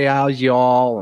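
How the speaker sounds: put-on Southern drawl. Mocking someone who now talks like a texan: imitating a texan accent. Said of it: "She says, "Y'all,"".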